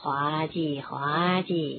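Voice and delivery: lazy, languid, very slow, low drawn-out drawl. Narrator reads a character's line, spoken almost lazily. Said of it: "卢平几乎是懒洋洋地说".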